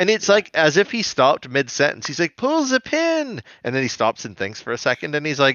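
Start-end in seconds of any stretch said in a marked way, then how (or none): 2.4-3.4 put-on frantic barked yell, very high, urgent. Retelling a cartoon scene, imitating a character yelling at Hack and Slash. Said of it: "yelling at Hack and Slash".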